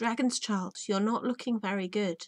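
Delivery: plain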